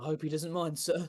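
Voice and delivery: uneasy, nervous, slightly high tone. Narrating a story, a character answers the one he calls sir; nervous tone. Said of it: "he says in a nervous tone".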